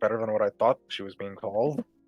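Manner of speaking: quiet, low mutter under the breath, half to himself. A player's character reacts to a nickname, muttering under his breath. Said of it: "would just mutter under his breath".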